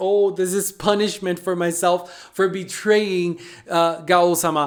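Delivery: ordinary delivery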